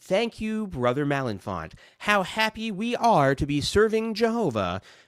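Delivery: very high, strange, swooping, over-the-top voice. Imitating the way witnesses speak at conventions: imitating over-the-top JW voice. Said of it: "this strange, over-the-top way of speaking".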